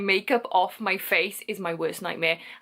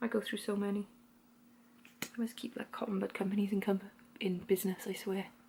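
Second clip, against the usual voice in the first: very hushed, very quiet mumbling; 11 dB quieter than usual. Doing makeup on camera, chatting to viewers: mumbling. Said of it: "Sorry, I'm mumbling".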